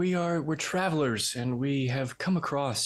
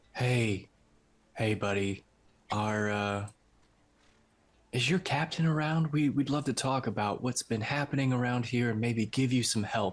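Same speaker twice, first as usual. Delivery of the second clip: syrupy, saccharine, sugary-sweet, over-nice friendly voice. Retelling a story, the speaker imitates their sister with mock saccharine sweetness. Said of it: "I put on the most saccharine personality".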